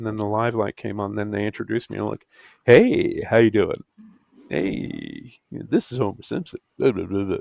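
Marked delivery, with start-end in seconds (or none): 2.6-7.4 radio DJ announcer delivery. Recalling being introduced live on another show, in a radio announcer voice. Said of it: "with the radio voice thing".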